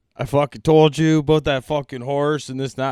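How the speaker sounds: loud, put-on angry rant. Retelling a coworker's words at the shop: imitating Dave sounding mad. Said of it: "I thought he was mad".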